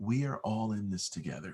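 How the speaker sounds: soft, welcoming, half-whispered voice, a bit gravelly. Voice actor demonstrating what they call their money voice for commercials, soft, half-whispery, a little gravelly. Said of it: "It's soft, it's whispery, it's it's a little gravelly".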